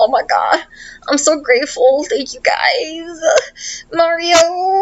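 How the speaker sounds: tearful gushing wail, pitched high.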